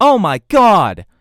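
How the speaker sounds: sudden excited outburst, yelling high and loud. Showing how a yell clips the microphone: excited yelling. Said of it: "if I were to get excited and start yelling".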